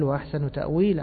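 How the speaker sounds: plain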